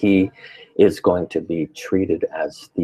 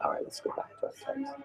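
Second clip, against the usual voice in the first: very soft, very high, hushed murmur; 17 dB quieter than usual. Teaching from a text, the speaker apologizes to the group: talking in a low tone. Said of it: "I'm talking so low tone".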